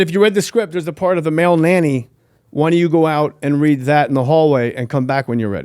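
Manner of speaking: plain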